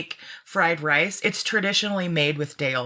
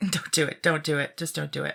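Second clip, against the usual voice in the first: playful mock scolding tone; 3 dB quieter than usual. Telling listeners how to dress a salad: mock scolding. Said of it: "I love that you scold".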